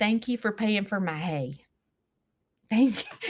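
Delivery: soft, sarcastic delivery. Speaking directly to a listener after a back-and-forth: sarcastic thanks. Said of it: "that sounds so sarcastic".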